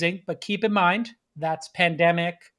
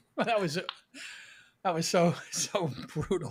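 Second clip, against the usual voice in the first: soft speech broken up by laughter; 7 dB quieter than usual. Reacting to another speaker's Instagram post from yesterday, laughing while talking. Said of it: "I'm laughing too much now".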